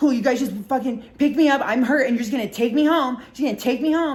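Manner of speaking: loud, pissy, upset mock griping. Retelling a friend's complaint after being picked up: imitating someone upset. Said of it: "like, all, like, upset".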